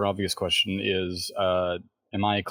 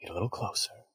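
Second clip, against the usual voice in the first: hushed, breathy, barely voiced whisper; 8 dB quieter than usual. Leaning over to his companion near the bomb, he whispers. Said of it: "leans over and he whispers".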